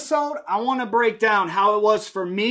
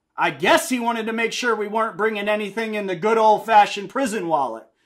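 normal talking voice

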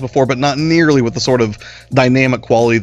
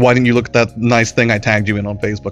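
ordinary delivery

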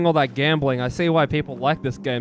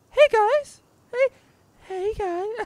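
very high anime-style streamer voice. Greeting the viewers, trying out an attempted VTuber voice. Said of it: "I tried to do the fucking VTuber voice".

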